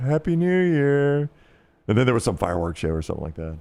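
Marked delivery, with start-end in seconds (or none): 0.0-1.3 play-acted mournful, pitiful, sad, forlorn voice. Retelling a voice from the back of a bus at midnight: imitating a sad greeting. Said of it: "It was the saddest moment of my New Year life".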